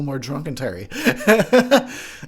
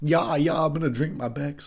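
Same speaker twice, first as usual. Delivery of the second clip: fake German accent, casual delivery; 4 dB quieter than usual. Repeating own line about drinking beer in a put-on German accent. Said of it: "Sounded German just now".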